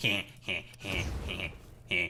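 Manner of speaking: quiet, slow cartoon snicker. Telling someone what they'll start doing next, in a Beavis and Butthead snicker. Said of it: "like in Beavis and Butthead fucking style".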